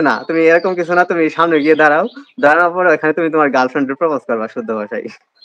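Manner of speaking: plain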